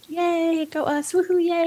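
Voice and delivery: restrained polite little cheer. Describing how the winning company reacts at an awards announcement, retelling reserved cheering. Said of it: "the winning OEM's like".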